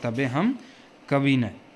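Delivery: normal talking voice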